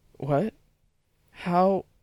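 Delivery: stammering. Jack answers her unexpected question, stammering. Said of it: "He stammered".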